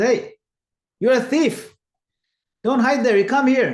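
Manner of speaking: shouting, calling out high and loud.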